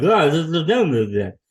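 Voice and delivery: garbled mumble through a full mouth. Retelling speaking at the dentist with a full mouth: mumbling like Joe Biden with mouth full. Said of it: "I sounded like Joe Biden".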